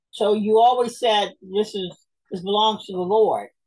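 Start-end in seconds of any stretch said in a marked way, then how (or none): none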